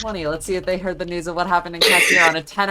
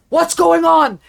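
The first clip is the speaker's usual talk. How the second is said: very high, loud shout; 11 semitones higher, 6 dB louder than usual. A guard on a horse cuts off a small group of people; shouting. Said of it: "just shouts".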